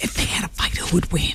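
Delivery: whispered, hushed. Feeling childish asking a silly question, whispering. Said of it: "I'm whispering because I feel very childish".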